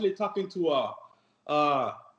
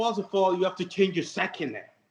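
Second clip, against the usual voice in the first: plain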